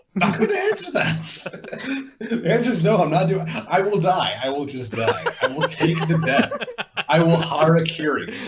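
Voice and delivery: high, laughing, protesting tone.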